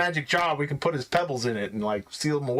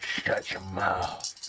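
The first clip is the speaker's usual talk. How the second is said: breathy, low, under-the-breath whispered mutter; 8 semitones lower, 5 dB quieter than usual. Showing how a line could be delivered while adding up a dice roll: said low. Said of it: "I could say it like low".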